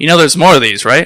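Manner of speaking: usual speaking voice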